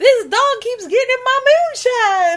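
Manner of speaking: high-pitched, loud, put-on backwoods hillbilly voice. Riffing on a movie full of backwoods hillbillies, then: backwoods hillbilly voice. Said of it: "a whole bunch of backwoods hillbillies".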